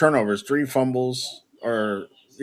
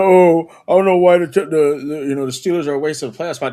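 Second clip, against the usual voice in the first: loud, dopey, dim-witted ranting voice; 4 semitones higher, 6 dB louder than usual. Mocking a commenter who dismissed the Steelers: mocking imitation of someone sounding like an idiot. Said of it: "he sounds like an idiot. He's like".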